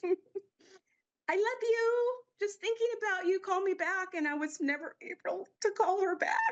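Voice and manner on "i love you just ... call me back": cute, little, high-pitched voice. Retelling a phone message she left: imitating Norma's high-pitched voice. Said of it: "her little high-pitched voice".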